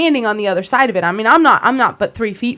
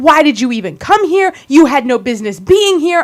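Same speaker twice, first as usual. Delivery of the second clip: acted-out scream, higher and louder; 4 semitones higher, 4 dB louder than usual. Retelling a confrontation where the other man screamed: imitating someone screaming. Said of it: "And he's screaming at me".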